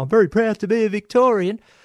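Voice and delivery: shrill, loud, pitched way up voice. Reading out a listener's email: Bill Lawry voice. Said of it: "in my best Bill Lawry voice".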